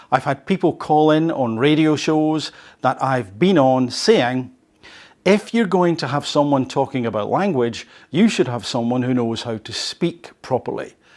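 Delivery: ordinary delivery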